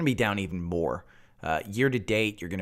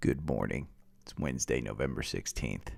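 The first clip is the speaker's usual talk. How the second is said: low, deep, hushed, somber tone; 8 semitones lower, 5 dB quieter than usual. Opening the day's recording, the speaker starts in mock-somber Jim Cramer voice. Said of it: "I'm starting in a somber voice".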